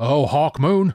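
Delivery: said through clenched, gritted teeth. A narrator reads the baron's oath after he rises from his knees, through clenched teeth. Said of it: "he said through clenched teeth".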